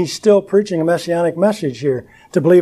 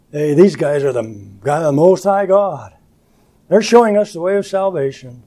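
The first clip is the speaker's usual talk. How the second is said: play-acted, fast, scornful, jeering, mocking tone. Retelling what a woman said in verse 17, imitating a mocking tone. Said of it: "but she said it mockingly".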